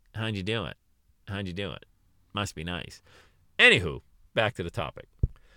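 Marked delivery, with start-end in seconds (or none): 0.1-3.0 play-acted soft, snide, condescending, belittling mutter. The speaker imitates employees asking how they did it: mock-condescending. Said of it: "they'll say it condescendingly".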